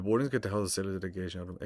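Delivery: ordinary delivery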